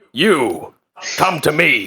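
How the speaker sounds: slow, deliberate pirate captain voice. Voicing a pirate captain calling a player's character over: voicing a tiefling pirate captain. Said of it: "a strapping tiefling pirate captain approaching her".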